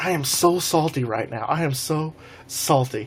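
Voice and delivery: ordinary delivery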